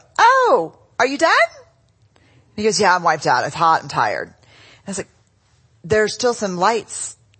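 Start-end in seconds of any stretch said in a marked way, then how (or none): 0.2-1.3 very high, loud, pointed passive-aggressive tone. Retelling asking Steve, back from mowing, whether he's done, acting passive-aggressive. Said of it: "In my passive aggressive voice".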